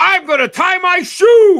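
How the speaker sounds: very loud, very high, booming, drawn-out big voice. Imitating Brad saying something ordinary: Brad's booming voice. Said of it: "Brad has got a booming voice".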